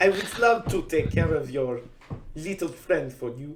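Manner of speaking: put-on French accent drifting into Italian. Attempting a French accent for a character line, French accent coming out Italian. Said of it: "Still not right".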